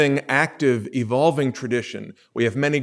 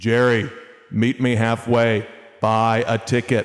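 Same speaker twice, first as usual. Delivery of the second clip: heavenly voice of God, proclaiming from above; 3 semitones lower than usual. Telling a story, the speaker voices the call from the heavens: booming voice from the heavens. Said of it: "a booming voice coming down from the heavens".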